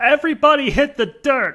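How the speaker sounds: put-on high-pitched kid voice, loud shouting. Retelling a line a kid yells in the episode: imitating a kid shouting. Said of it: "who shouts".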